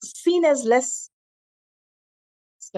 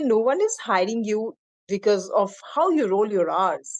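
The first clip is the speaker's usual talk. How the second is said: plain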